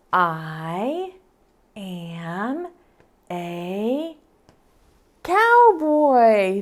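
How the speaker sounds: very slow, careful reading with I drawn out. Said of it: "a little bit louder so I can hear you".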